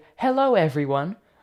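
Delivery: patronizing, condescending teacher-like voice. Mocking a greeting the listener would prefer: condescending teacher voice. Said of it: "like some sort of condescending teacher".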